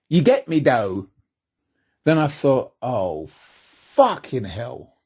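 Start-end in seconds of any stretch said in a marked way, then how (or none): 0.1-1.1 imitated London urban street-talk accent. Describing a voice heard before performing, in a london urban accent. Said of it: "I heard a distinct London urban accent".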